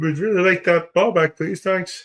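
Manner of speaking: very high, squeezed-up puppet-style voice. Reacting to a player losing the ball to Patrick Mahomes; Kermit the Frog impression. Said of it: "That's your Kermit the Frog?".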